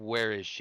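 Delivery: quiet muttering under the breath. Asking a sword where someone is: muttering under breath. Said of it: "ask it under my breath".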